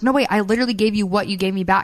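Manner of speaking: ordinary talk, nothing marked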